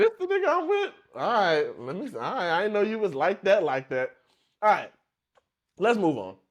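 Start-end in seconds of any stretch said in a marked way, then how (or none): 0.0-0.9 very high-pitched, incredulous, disbelieving voice. Speaker acts out the woman's reaction to her date, imitating the woman he's with. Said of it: "She like".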